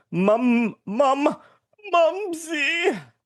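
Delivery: fake English accent, put on for show. Reading out the next name when asked who is next: put-on English accent. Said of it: "Good accent".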